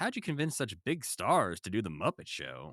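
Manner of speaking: imitated condescending TV host voice. Retelling an interviewer's question to Jim: imitating Wogan being condescending. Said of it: "he's very condescending".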